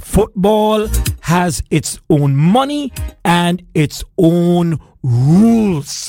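speaking very slowly. Answering a listener's question, saying it very slowly. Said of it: "I want to say this slowly to you".

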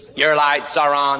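synthetic robotic female announcer voice. Speaker imitates what Toyota cars say to drivers, in a robot woman's voice. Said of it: "this little robot woman's voice".

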